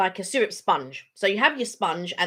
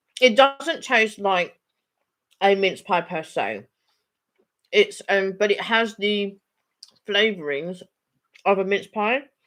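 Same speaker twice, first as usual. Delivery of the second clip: muffled speech with mouth full of food. Speaker describing a food she is eating, talking with mouth full. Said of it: "She says with a mouthful".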